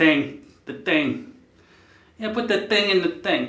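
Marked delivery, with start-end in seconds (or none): 2.2-3.5 pitched-up New York accent. Speaker showing off an accent he loves, Bill Burr New York accent. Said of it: "close to the New York fucking thing".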